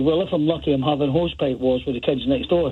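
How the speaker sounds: ordinary delivery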